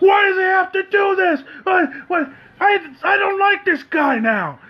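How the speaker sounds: very high-pitched, frantic, losing-it rant, acted out. Retelling a commentator's reaction to an interference: imitating Corey Graves going nuts. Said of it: "Corey Graves goes fucking nuts on commentary".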